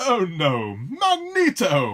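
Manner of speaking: put-on pleasant British accent, exclaimed with swooping pitch. Retelling a reaction to a friend's Magneto shirt: Patrick Stewart impression in British accent. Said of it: "he just let out in this nice British accent".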